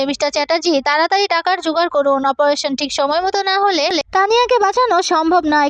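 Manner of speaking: plain reading voice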